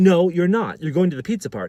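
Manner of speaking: mock angry bossy tone. Retelling the staff member insisting he attend: imitating an angry woman. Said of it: "She's mad".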